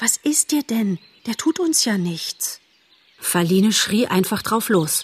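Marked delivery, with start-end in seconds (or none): 0.0-2.6 worried, anxious whisper, voice trembling and shaking. Bambi tries to comfort Faline, worried whisper with a trembling voice. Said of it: "flüsterte er ganz besorgt, aber seine Stimme zitterte".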